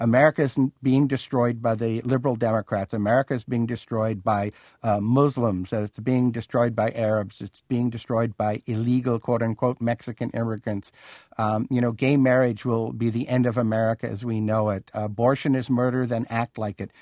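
ordinary talk

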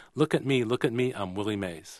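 ordinary talk, nothing marked

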